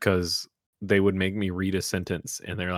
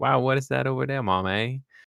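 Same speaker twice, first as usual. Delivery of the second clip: put-on thick Appalachian accent, much higher; 6 semitones higher than usual. Recalling childhood, the speaker imitates their younger self's thick appalachian accent. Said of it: "A thick one".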